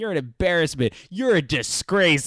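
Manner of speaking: mock scolding, berating yell, very close. Retelling a movie scene, imitating Chris Cooper yelling. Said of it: "Chris Cooper is, like, yelling at his face".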